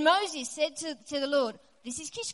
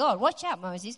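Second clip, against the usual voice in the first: ordinary talk, nothing marked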